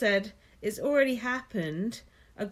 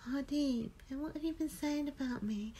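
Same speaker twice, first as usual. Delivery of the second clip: put-on meek, babyish tone; 4 semitones higher, 10 dB quieter than usual. Retelling what Roxanne said to Hardy, in a mock-meek Roxanne voice. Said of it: "And she said it like that, like a meek tone. talking like a baby".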